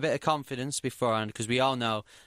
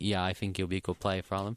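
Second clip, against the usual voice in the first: calm delivery, lower pitch; 3 semitones lower than usual. Recalling own smaller rant on the podcast, quoting oneself: retelling saying it calmly. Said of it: "I just said calmly".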